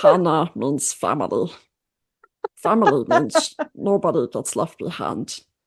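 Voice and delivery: swooping cartoon alien creature voice, pitch swinging. Showing off one of the voices the speaker can do, in a Stitch voice. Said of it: "Stitch is one of the voices I can do".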